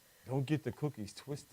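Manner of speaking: mimicked deep voice. Imitating how the other speaker sounded calling in: imitating someone's low voice. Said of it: "that low voice".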